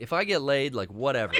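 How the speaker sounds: normal talking voice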